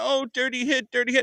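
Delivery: mock sulky, whimpering, whiny crying tone. Ranting about football, the speaker mocks the other team's fans, mock-whining like crying fans. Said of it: "you guys are sitting there crying".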